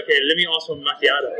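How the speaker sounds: normal talking voice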